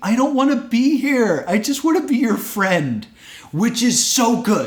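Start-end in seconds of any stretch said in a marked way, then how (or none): 0.0-3.1 mock, high-pitched screaming. Retelling a moment from a wrestling match: imitating someone screaming. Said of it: "he's screaming".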